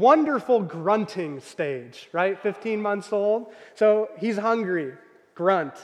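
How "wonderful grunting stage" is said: heavy sarcasm, swooping sing-song. Father describing his 15-month-old's grunting stage, sarcastic. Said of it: "hear the sarcasm".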